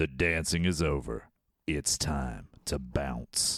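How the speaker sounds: deep, dramatic ad-style announcer voice. After clearing the throat, delivering a Roadhouse line in a dramatic allergy voice. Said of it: "good dramatic allergy voice".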